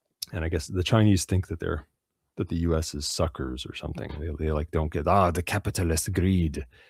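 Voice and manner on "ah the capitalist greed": put-on mock Spanish accent. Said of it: "sounds like a Spanish person or something".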